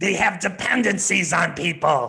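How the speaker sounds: loud, ominous, creepy, scary voice. Reading the 'they' statements while a partner reads the 'we' statements, in a scary voice. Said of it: "read the they statements in a scary type of voice".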